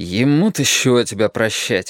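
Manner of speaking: squeamish, disdainful, contemptuous. A man answers a woman's anxious question, disdainfully. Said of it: "спросил он брезгливо".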